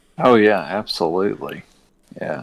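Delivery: heavy, slow, dripping sarcasm. Answering whether excited about the new Destiny update: sarcastic. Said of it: "That was so sarcastic".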